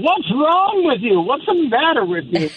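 mock, very high, shrill yelling outburst. Imagining what a named colleague would yell: imitating Chris Lavoie yelling. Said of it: "he would just yell".

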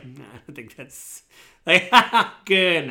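speaking through laughter. Voicing a concierge answering a guest's joke: laughing while talking. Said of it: "laughs at the same time".

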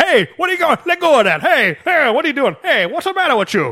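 very high, shrill, swooping cartoon gangster holler. Retelling the forklift driver's shouts in a movie scene: imitating a cartoon gangster voice. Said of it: "the gangsters are stock prohibition cartoon".

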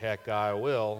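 muttering under the breath. Retelling how a reluctant class member answered a door-knocking trip: imitating a mutter under the breath. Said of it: "mutter under his breath".

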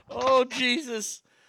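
words lost in big, helpless laughs. Reacting to another speaker's bracket picks: laughing hard. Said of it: "I'm mocking laughing so hard".

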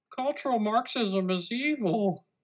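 very high, puppet-style put-on voice. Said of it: "It sounds like Jordan Peterson".

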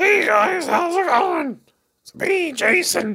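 very high-pitched, frog-like voice. Recalling a middle-school classmate everyone called Frog: imitating Jason's voice. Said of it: "We called him Frog".

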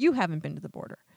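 mild, gentle voice with a rising tone. Recounting an interview, mimicking Lester Holt's gentle question. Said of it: "he said it very gently, like as a question".

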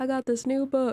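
high, showy put-on celebrity voice, played for laughs. Imagining a guest expert pitching a book: Doctor Phil impression. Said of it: "That was my Doctor Phil impression".

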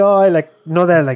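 usual speaking voice

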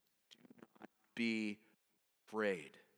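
calm, very low, unhurried, steady voice. Speaker retells Elisha's reply to his servant, retelling a calm declaration. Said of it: "Elisha calmly declares".

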